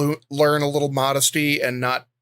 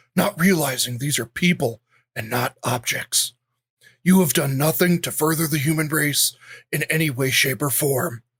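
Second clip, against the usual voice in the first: put-on menacing horror villain voice. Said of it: "read it in my kinda sawy voice".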